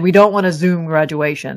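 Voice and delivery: ordinary talk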